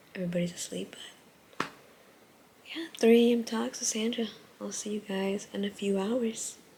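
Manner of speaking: soft, hushed whisper. With everyone asleep, speaker signs off to viewers for a few hours: whispering. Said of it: "I'm whispering".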